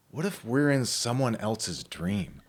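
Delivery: sleepy, half-dreaming, put-on half-asleep child voice. Retelling a daughter's question asked while half asleep: imitating a half-asleep child. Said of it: "half asleep and in this kind of half dream state".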